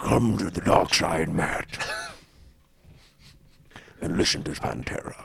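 put-on grumbly devil voice. Answering a request to do a Satan voice: grumbly Satan voice. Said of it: "Do your best Satan voice, uh, with your grumbly throat".

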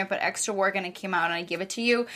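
ordinary talk

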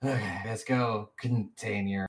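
slight sigh. Voicing a character who steps back before speaking: slight sigh. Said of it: "with a slight sigh and she's like".

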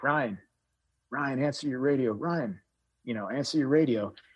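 faint, distant, echoing, radio-like voice as down a tunnel. Retelling radio calls heard after a blast, imitating faint echoing radio voices. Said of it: "like someone was screaming into a tunnel".

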